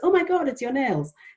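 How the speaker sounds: very high-pitched, mock airhead girly voice. Retelling how a woman quoted a stereotype she rejects: mock girly voice. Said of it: "a mock girly voice, so a sort of high-pitched kind of girly voice".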